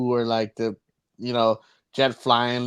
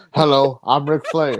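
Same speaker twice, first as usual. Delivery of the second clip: mock flat, unconvincing delivery, louder; 2 semitones higher, 5 dB louder than usual. Mocking an actor's take on the role: imitating a bad Ric Flair portrayal. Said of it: "I'm gonna do my own interpretation of Ric Flair".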